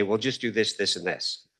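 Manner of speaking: acted-out patronizing, over-simple, talking-down delivery. Retelling how the sons handed over a controller: imitating a condescending tone. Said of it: "very condescendingly say".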